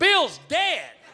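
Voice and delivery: panicked scream, very high, loud, frantic. Recounting being knocked out while a friend ran to the mother, retelling a panicked scream. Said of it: "runs into her bedroom and screams".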